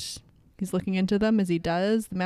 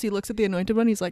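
ordinary talk, nothing marked

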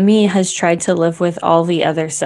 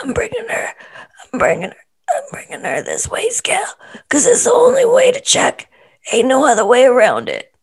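high, swooping, lively, animated put-on voice; 8 semitones higher than usual. Doing an impersonation of Chris bringing a weigh scale: Chris impersonation. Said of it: "do your Chris impersonation".

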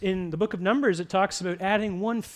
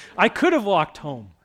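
usual speaking voice

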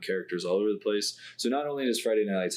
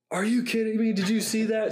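put-on very high, yelling sideline coach voice; 3 dB louder than usual. Discussing a movie, the speaker imitates how Billy Bob yelled as the coach. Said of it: "He yelled like".

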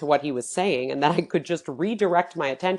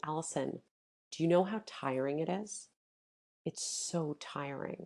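play-acted deep pain, weary, pained, despairing tone; 13 dB quieter than usual. Speaker retelling what he said to her, retelling his tone of deep pain. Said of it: "with this tone that it was he was in deep pain".

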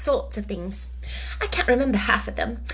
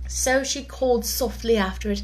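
ordinary delivery

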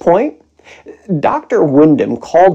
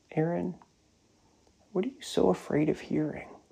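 very quiet, soft, gentle and tender; 18 dB quieter than usual. Retelling how his doctor asked him a question, retelling a gentle, tender question. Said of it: "said so gently and tenderly".

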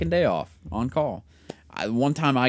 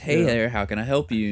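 courteous, polite customer-service voice. Speaker shows how they answer the phone, in a great customer service voice. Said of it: "I literally answer the phone with like a great customer service voice".

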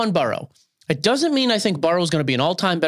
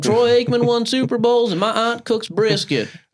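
put-on, pitched-up Texan accent, a little Southern; 7 semitones higher than usual. Doing a texan accent after being asked about one, texan accent. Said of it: "I'm doing a Texan accent".

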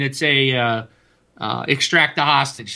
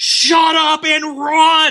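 mock, very slow, loud, spaced-out, drawn-out yelling; 14 semitones higher, 6 dB louder than usual. Retelling a game moment, telling a teammate to hurry: retelling a yell.

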